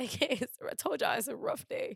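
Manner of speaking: tearful. On an emotional day, the speaker tells listeners it's a rough day, crying. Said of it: "Stop crying".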